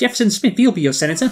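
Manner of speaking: accent slipping into English. Playing a character's line in an accidentally English-sounding voice. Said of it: "sounds too like English".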